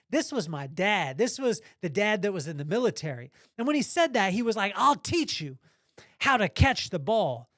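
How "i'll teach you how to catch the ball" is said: put-on exasperated, angry, frustrated voice. Quoting his military dad lining him and his brother up, mock-angry and frustrated. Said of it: "said angrily, frustrated, in an angrily frustrated tone".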